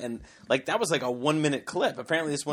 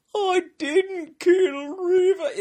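fake crying, much higher, louder and slower; 7 dB louder than usual. Talking about a trial, the speaker quotes the defendant, imitating Pistorius's crying voice. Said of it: "The weirdest cry voice".

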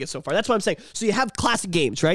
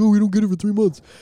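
mock, put-on Japanese accent; 4 dB louder than usual. Speaker imitates people in japan for a co-host, in a put-on japanese accent. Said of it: "is that what people in Japan sound like?".

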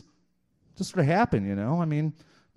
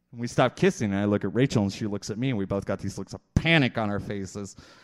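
ordinary talk, nothing marked

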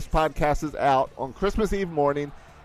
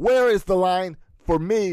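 put-on male yelling voice at a higher pitch; 4 semitones higher, 3 dB louder than usual. Retelling a customer in line who yells at the cashier: imitating a man yelling. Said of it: "he just yells at the cashier".

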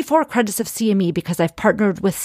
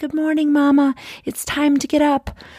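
put-on breathless, high child voice; 6 semitones higher than usual. Remembering your kids waking you early, imitating a child's breathless voice. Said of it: "with this just breathless voice".

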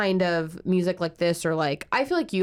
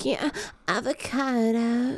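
put-on high indie girl speech style; 5 semitones higher than usual. Showing how an indie girl would talk: imitating an indie girl talking. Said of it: "like how an indie girl would talk".

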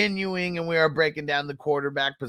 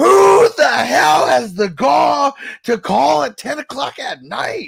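very loud, high, shrill, hoarse, raspy screaming; 10 semitones higher, 10 dB louder than usual. The door rings at your house; act it out screaming like Jordan Belfort's dad when the phone rings. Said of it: "He just starts like screaming".

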